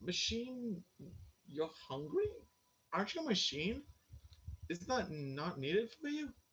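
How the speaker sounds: baffled, confused, perplexed, puzzled tone. Voicing Binns, who asks the machine why it is hungry: perplexed. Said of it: "He looks perplexed".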